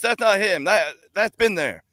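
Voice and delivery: put-on failed, botched Irish accent, very high-pitched. Retelling what another guy said about the car, in a failed Irish-sounding accent. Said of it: "I don't know what accent you're doing, but it's not an Irish accent".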